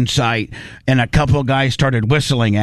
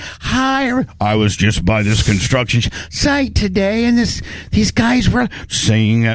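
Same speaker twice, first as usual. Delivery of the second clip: high, swooping, trying-hard put-on feminine voice; 7 semitones higher than usual. Mocking a person on video who toggles voices: imitating Shim Lummy's put-on feminine voice. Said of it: "trying to be a feminine voice".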